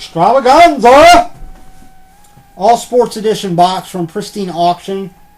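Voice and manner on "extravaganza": extravaganza drawn out slow, high and loud. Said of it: "Gotta put some emphasis on the word".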